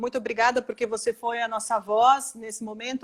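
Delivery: plain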